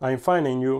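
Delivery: terrible put-on English accent. Demonstrating phrases in several languages, speaking English with a terrible English accent. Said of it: "Mon accent anglais, il est terrible".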